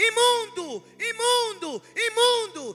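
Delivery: put-on shouting. Retelling how the leper approached Jesus: imitating a leper shouting. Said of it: "quando ele começa a gritar".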